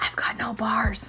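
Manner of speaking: hissed under the breath. Storyteller quoting the girl he was with after she dialed 911: retelling a hiss. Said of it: "She hissed".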